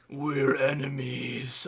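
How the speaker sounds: gravelly, menacing troll growl. Narrator voices a troll confronting the group, growling in a gravelly voice. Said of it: "one of them growls in a gravelly voice".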